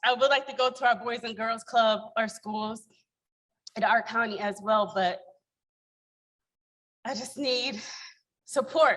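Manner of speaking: trembling, shaking, nervous little voice. A newcomer asks the group to come help in their county, shaking voice. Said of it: "my little voice, as you guys can hear, is shaking right now".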